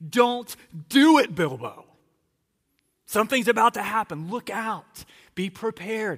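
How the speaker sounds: put-on very loud, high-pitched child's scream. Retelling the boys warning Bilbo in the story: imitating kids screaming a warning. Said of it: "with their voices are screaming".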